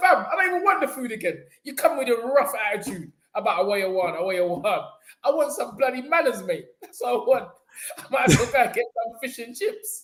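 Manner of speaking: complaining, griping tone. Retelling what was said to the brother about the food: imitating own past complaint. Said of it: "that's what I said to the brother".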